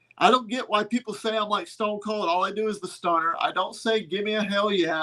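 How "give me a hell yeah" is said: ordinary talk, nothing marked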